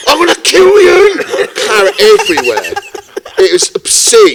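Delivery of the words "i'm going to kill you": acted-out, very high, enraged, furious scream. Retelling a bald, blood-drenched man's threat, imitating an angry yell. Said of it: "and angry".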